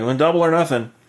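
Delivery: put-on drunk, words running together. Retelling a scene where drinking characters offer double or nothing: imitating slurred drunk speech. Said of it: "he's slurring a speech 'cause".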